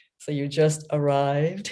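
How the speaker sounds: very deep, slow, drawn-out voice. Quoting a woman who stood close and asked a question: very deep voice. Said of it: "said in her very deep voice, ... Like this".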